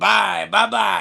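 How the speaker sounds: rough, raspy, creaky voice. Showing how to say goodbye to strangers, in a raspy voice. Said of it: "you got to tell them that in a raspy voice".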